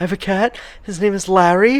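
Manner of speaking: put-on high, earnest voice like a small child.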